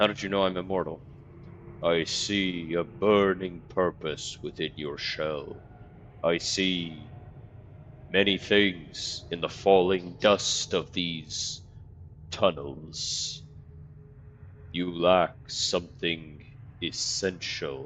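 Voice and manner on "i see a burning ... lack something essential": very slow, creaking, grinding voice like shifting boulders. A stone face on a tunnel wall speaks to the immortal player, creaking stone-face voice. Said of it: "in a creaking voice that sounds like the shifting of boulders".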